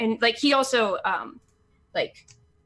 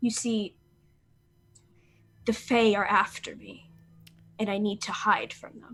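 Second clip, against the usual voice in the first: conspiratorial, secretive, confiding tone; 3 dB quieter than usual. Narrator voicing a character confiding in a woman, conspiratorial. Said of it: "conspiratorially like lays a hand on her arm and leans forward".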